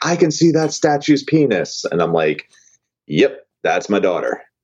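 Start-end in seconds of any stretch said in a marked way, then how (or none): 0.0-1.8 put-on kid's shout, shrill and very high pitched. Retelling what the daughter yelled out in a museum statue room: retelling a top-of-lungs yell. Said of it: "just yells out at the top of her lungs".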